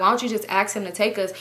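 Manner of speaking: plain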